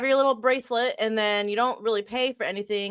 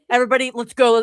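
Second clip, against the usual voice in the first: put-on bossy tone; 7 dB louder than usual. Retelling how Rue rushed everyone out in the morning: imitating a bossy dad. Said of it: "Rue is a dad".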